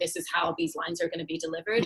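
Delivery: ordinary delivery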